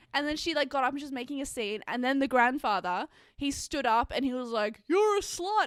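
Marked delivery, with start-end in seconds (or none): 4.8-5.6 very high, shrill, loud yelled outburst. Retelling a ceremony, the speaker quotes the grandfather shouting at the mistress. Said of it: "And he like shouted at her".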